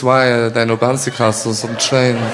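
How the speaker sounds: put-on French accent.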